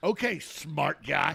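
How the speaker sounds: loud, mocking, sarcastic tone. Retelling what she said to the speaker, imitating a sarcastic tone. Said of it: "in that sarcastic tone".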